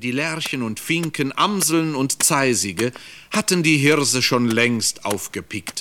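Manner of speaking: plain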